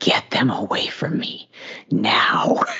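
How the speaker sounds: put-on demonic, devilish voice. Speaker retells what they told their husband during a donut argument: devil voice. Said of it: "in like some devil voice".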